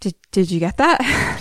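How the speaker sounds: mock heavy, panicked panting. Retelling a scene where Angela freaks out and asks about the tape: imitating heavy panicked panting. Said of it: "heavy panting".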